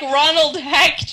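put-on very loud German accent, belted out. Retelling how dad gives his name at a restaurant, imitating Roland's German accent. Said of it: "in his German accent".

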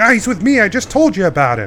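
very loud, high, swooping yell. Voicing a character calling from inside a door: yelling as Snake. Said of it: "Snake yell".

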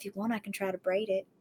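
very quiet, close, barely-a-breath half-whisper. Recapping a scene: one woman leans closer to another, acting out a half-whisper. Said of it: "and whispers".

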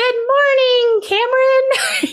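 put-on tiny, adorable, very high little child's voice. Describing the Alexa app's morning greeting in the kid's room, imitating the Alexa kid voice. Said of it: "we've set it to be a kid's voice".

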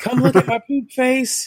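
yelling. Retelling what a client said about herself: imitating someone yelling. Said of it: "I'm pooping and I'm yelling".

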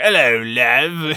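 slow, terrible fake Australian accent.

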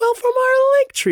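exaggerated, strained, overdone put-on voice, very high. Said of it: "I overdid it".

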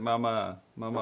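mock screaming in a child's voice. Retelling how a little girl burst into tears and called out: imitating a child screaming. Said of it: "she just starts screaming out for Nikki".

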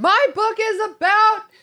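high, loud, slow yelling. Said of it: "Why are you yelling at me?".

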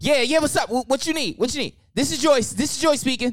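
play-acted frantic, flustered, panicked voice, very high. Speaker imitates mom answering the bakery phone, imitating Joyce's panicked phone answer. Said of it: "my mom always answered the phone in Absolutely. The most panicking way".

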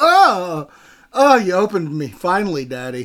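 very slow, lingering, drawn-out character voice. Voicing a freshly opened beer can for laughs: opened beer can voice. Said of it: "That's how that sounds".

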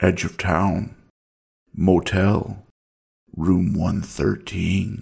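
mechanical, level, flat robot-like monotone. Narrating a man answering Chris's question: words coming out robotically. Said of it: "His words came out robotically".

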